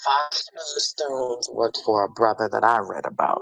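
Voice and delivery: low, full, put-on undead zombie voice. Tammy chiming in on the conversation, zombie voice. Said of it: "Tammy had a whole zombie voice happening".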